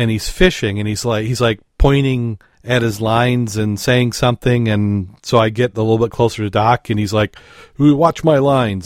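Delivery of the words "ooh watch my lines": mild, acted calling out. Retelling how a fisherman on shore shouted at the diver: imitating a fisherman yelling. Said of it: "he's just yelling at me".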